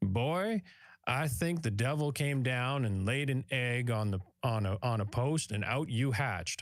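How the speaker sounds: put-on convincing Southern accent. Retelling what a judge told a boy in court again and again, in a Southern accent. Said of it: "You're doing a good Southern accent there".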